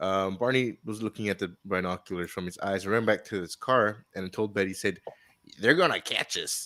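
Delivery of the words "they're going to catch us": put-on American accent, best effort. Retelling a frightened warning to his wife: best American accent. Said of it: "that was my best American".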